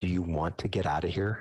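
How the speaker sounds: faint, quiet, confiding private aside. In a game scene, speaking so only the gnome can hear, faint, quiet voice. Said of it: "I just say kind of faintly so only the gnome can hear me".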